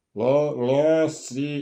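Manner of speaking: put-on tongue-folded old man voice. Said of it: "it was like this".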